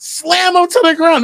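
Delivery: shrill, very high-pitched scream. Retelling how other parents scream at a wrestling match, imitating parents screaming. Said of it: "other parents really screaming".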